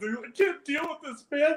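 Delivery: words squeezed out through giggles, very high pitch. Retelling a video where someone tries to focus on gameplay: imitating someone laughing while talking. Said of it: "he's just laughing like".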